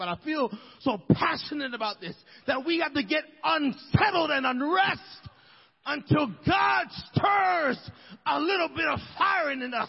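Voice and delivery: fervent, passionate preaching delivery at a yell. Speaker encouraging the saints of God tonight, yelling. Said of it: "I don't know why I'm yelling tonight".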